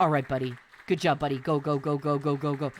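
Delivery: low, deep, quiet muttering under the breath, encouraging tone. Describing a video where the speaker screams, imitating Zolom's quiet cheering. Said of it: "Zolon's quietly like cheering him".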